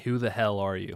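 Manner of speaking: ordinary delivery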